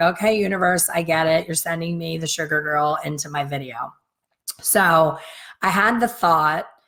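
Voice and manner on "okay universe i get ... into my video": plain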